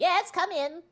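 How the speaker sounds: very high, loud, tiny squeak of a voice. Game master voices whoever answers the player's knock, in a tiny little voice. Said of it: "you hear a tiny little voice go".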